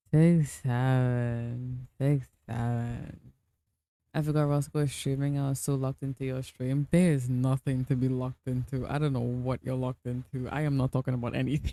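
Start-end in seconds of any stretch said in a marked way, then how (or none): 0.1-3.2 play-acted weary, very slow drawl, seven stretched. Wondering why a guy says a phrase that way, imitating a tired delivery. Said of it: "He says it like he's tired".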